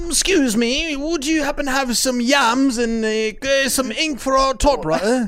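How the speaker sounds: put-on high, slow, prim and polite old-timey voice.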